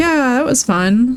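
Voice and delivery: play-acted very vague, non-committal tone, drawn out. Talking about the game Dead Space, imitating someone non-committal: mock non-committal tone. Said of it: "somebody very non-committal is like".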